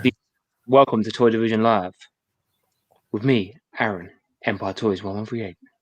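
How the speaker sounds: calm, smooth radio presenter voice. Opening a live toy show, the host introduces the stream: calm radio voice. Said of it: "it's a very calm introduction".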